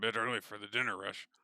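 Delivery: muttering under breath. A game master voices a barkeep as the group comes in: muttering under breath. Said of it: "mutter under his breath".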